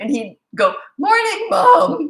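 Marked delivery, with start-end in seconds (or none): 1.0-2.1 voice cracking, very high and very loud. A mother imitates her son's morning reply to her, with a crackling voice. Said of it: "with a crackling voice".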